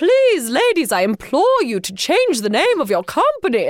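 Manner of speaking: agitated, hopped-up British woman voice. Retelling an email from an agitated british lady: imitating a hopped-up british lady. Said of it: "some hopped up British lady who's like".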